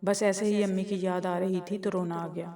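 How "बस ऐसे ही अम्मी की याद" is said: ordinary delivery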